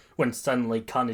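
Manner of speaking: plain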